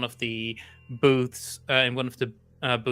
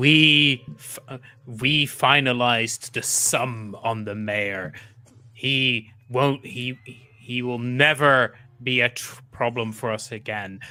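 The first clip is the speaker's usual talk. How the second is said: big, booming boss-man voice, drawn-out we; 4 dB louder than usual. Storyteller voices the managing partner the listeners overhear: booming Jeremiah Abernathy voice. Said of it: "a voice booming".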